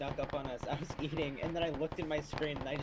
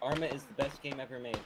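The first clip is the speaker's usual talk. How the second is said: plain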